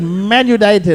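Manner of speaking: mock insistent, loud, forceful, fully confident delivery. Teasing someone about how he named his football team, imitating a loud confident claim. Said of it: "the way he said it".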